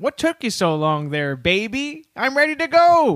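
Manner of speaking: put-on high, sing-song woman's voice. Improvising the line of a Depression tramp's wife: acting the tramp's wife. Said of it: "his wife would be like".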